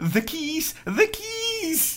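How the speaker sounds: hammy, overacted, very high, very slow, swooping. Recounting a film moment that made the speaker chuckle, overacted Jamie Lee Curtis. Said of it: "heel erg overdreven zegt".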